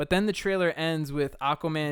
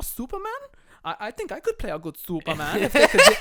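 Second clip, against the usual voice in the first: put-on, swooping, sing-song, bouncy German accent; 7 semitones higher, 8 dB louder than usual. Imitating an actor joking on screen: Flula Borg impression. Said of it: "at least he has the German accent".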